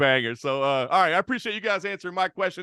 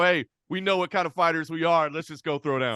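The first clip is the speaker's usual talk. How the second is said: normal talking voice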